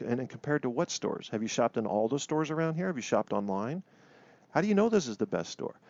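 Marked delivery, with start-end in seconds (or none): 4.5-5.7 sharp, pointed delivery, pitched up. Demonstrating a question about a store asked in a pointed tone. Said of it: "I sound kind of pointed saying it that way".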